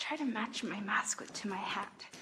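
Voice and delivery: soft, unvoiced whisper. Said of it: "I don't know why I'm whispering".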